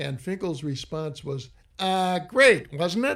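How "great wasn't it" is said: put-on nasal voice, higher and louder.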